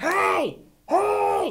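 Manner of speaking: very high, screaming, hollering call. Running a game, the narrator voices something far off calling to the players, screaming. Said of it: "It is screaming, going".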